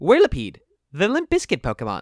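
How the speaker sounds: very energetic, loud, swooping narrator voice. Moving on to the next Pokemon, a speaker does a Pokedex impression. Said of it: "a really good impression of the Pokedex".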